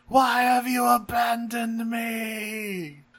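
very high scream with me drawn out. Recounting a scene where a character flies up and screams into the sky, retelling a scream. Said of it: "he just screams into the sky".

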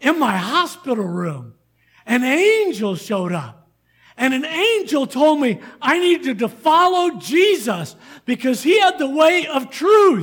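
loud, animated, eager, all-excited delivery. Retelling a neighbour's news after heart surgery: imitating someone excited. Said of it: "He was all excited".

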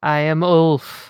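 theatrical delivery. Introducing a Viking character at the session start: dramatic delivery. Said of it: "so dramatic".

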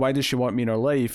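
ordinary talk, nothing marked

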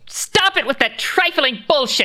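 screaming. Voicing a character who screams at the crowd in the hangar: screaming. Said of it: "Lady Sark screams".

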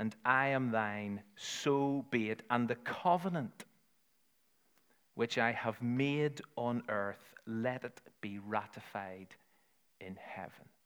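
very slow, unhurried, deliberate, measured reading. Reading the traditional covenant prayer aloud to listeners, reading very slowly. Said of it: "I'm going to read it really slowly".

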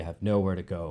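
mock frustration, said softly. Recounting a film moment, quoting the actor's line, retelling a soft line. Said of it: "He says it softly".

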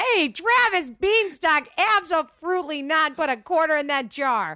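worked-up, high-pitched outburst. Telling Travis to put a quarter in the jar: raised voice. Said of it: "You raised your voice".

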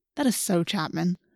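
plain reading voice

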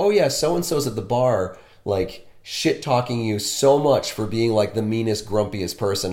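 usual speaking voice

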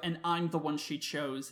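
ordinary delivery

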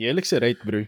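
fake, mock South African accent. Quoting the listener's earlier reaction, the speaker uses a put-on south african accent. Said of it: "I gave you like a South African accent".

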